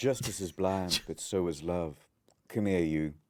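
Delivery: put-on sweet Southern belle accent. Continuing the Judge Judy impression with a sweet Southern belle accent. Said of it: "just a sweet Southern belle".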